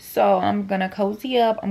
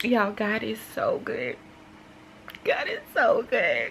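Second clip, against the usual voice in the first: slow, tearful delivery, weeping through the words; 3 dB quieter than usual. Talking to viewers about a film that moved them, crying while talking. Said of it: "I'm gonna stop crying".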